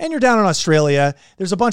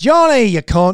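loud, put-on Northern Irish accent; 3 semitones higher, 5 dB louder than usual. Reading out an Australian fan's Instagram message, slipping into a Northern Irish accent. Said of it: "I just went Irish right there".

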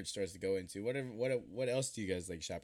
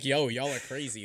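ordinary delivery

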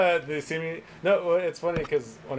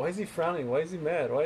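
usual speaking voice

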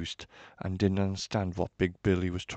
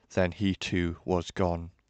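plain reading voice

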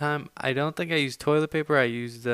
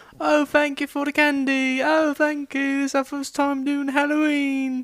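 put-on very high-pitched British accent; 13 semitones higher, 5 dB louder than usual. Retelling trick-or-treating while pretending to be exchange students, speaker uses British accent. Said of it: "we all kind of had a British accent going".

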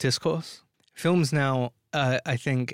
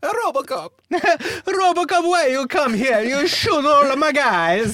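very high, loud put-on Italian mafia-style accent; 13 semitones higher, 7 dB louder than usual. Discussing Robocop, a speaker voices the mafia guy in a mock Italian mafia accent. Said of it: "we're pulling out all the accents today".

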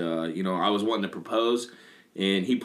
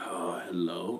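mock irritated, annoyed, grumpy tone; 2 semitones lower, 8 dB quieter than usual. Retelling a phone call answered by a friend: imitating someone sounding pissed off. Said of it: "why you sound all pissed off".

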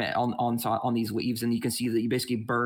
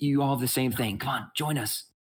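mock whisper, higher pitch; 4 semitones higher than usual. Acting out a character from a story calling others to come up and join her. Retelling a whisper. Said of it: "she basically kind of like whispers".

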